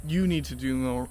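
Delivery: "you" stressed hard, pushed up front. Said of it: "I need to do more".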